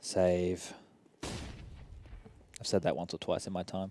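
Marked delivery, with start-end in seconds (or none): 0.0-0.7 quiet, subdued, deflated delivery. Getting in character after they stacked the wrong bomb site: quiet, subdued call. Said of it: "Goes a little bit silent like this. Give me one second. Let me get in character".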